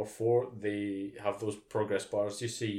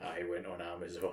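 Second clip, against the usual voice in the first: acted, hushed, scheming villain-mastermind evil-genius voice; 3 semitones lower, 6 dB quieter than usual. Voicing a little girl in a photo answering her parents: mock evil-genius voice. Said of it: "drumming the fingers in an evil kind of fucking genius way".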